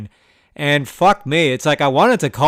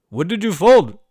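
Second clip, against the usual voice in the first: put-on Indian accent; 5 semitones higher than usual. Retelling a man's question after the speaker folded, in an Indian accent. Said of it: "he's got an Indian accent".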